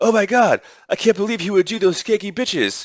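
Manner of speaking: high-pitched, scornful, scoffing indignant shock. Retelling how a woman reacted to the strippers: mocking imitation of Stephanie. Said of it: "She's like".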